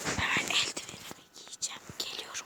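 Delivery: soft, unvoiced, secretive whisper.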